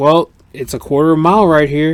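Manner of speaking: put-on boozy, tipsy drunk man's voice. Retelling what a drunk racer said, imitating a drunk man. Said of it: "And he was so drunk".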